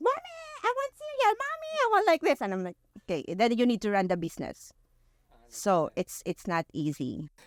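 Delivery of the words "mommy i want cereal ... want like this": put-on very high screeching, screaming children. A mom running a business retells her kids at home, imitating kids screaming. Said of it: "the kids are like screaming".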